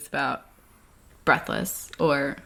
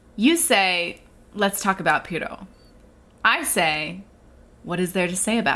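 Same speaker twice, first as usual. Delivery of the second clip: ordinary delivery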